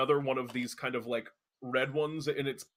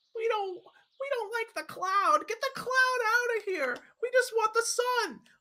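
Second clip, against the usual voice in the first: kind of yelling, much higher pitch; 4 dB louder than usual. Narrating a scene, voicing daisies kind of yelling at two little ones. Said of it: "daisies are kind of like yelling".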